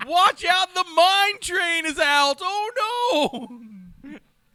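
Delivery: put-on shrill, booming old-timey prospector voice, very high and loud. Imitating a man whose voice is just Western, call out in an old-timey prospector voice. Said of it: "more like a old timey prospector".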